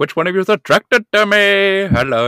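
high-pitched, put-on cartoon-style voice. Showing the go-to phrase for getting into a King Julien voice. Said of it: "Like when I do King Julian, I'm like".

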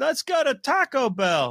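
very high, slow, swooping, sing-song puppet voice. Asked for an impression, doing a Mark Ellis impression. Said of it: "you wanna do your quick Ellis impression".

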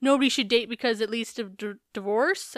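ordinary delivery

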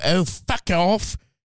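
put-on British accent. Showing what to say to make him leave the room, in a British accent. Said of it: "if he's bothering you and you do a British accent".

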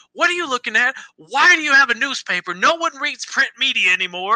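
high-pitched, yelling, ranting delivery. Retelling a man yelling at a passerby reading a newspaper, retelling someone yelling. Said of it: "he's yelling at them like".

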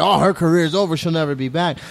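usual speaking voice

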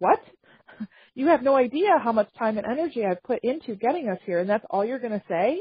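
stunned, incredulous, disbelieving tone. Retelling a mother's reaction after a long trip: imitating an incredulous mother. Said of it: "the mom is looking at him incredulous".

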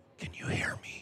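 hushed, very quiet, breathy whisper, barely audible. Retelling a partner whispering from three hundred yards away: imitating a whisper. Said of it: "I hear him whisper".

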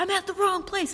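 put-on sudden shriek, very high-pitched. Speaker retells a man bolting from the wrong place, retelling a scream. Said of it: "just screams and was like".

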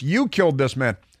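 ordinary talk, nothing marked

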